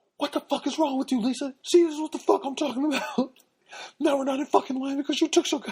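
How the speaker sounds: very high, loud, top-of-lungs yelling. Retelling a man yelling at his wife in line, imitating a man yelling. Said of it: "at the top of his lungs starts yelling".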